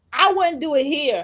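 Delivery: acted loud remark. Retelling a coworker's remark at work, imitating someone saying it loudly. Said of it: "And she said that loud".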